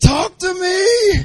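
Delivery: sudden, very high, shrill shrieking shout. Retelling a man heard shouting in the background of a preaching podcast: imitating a scream. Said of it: "all of a sudden he screams".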